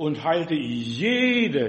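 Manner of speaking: stressed jede, drawn out very slowly.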